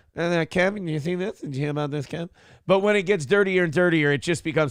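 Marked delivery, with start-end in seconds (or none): 0.2-2.3 high-pitched voice with a strong lisp. Showing how the bit sounds at the setup: Jay Leno voice. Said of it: "when it's just the setup".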